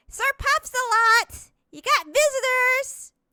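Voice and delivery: shrill, high, loud shout. A game master voices a woman at a villa doorway calling someone out, yelling. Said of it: "and she will yell".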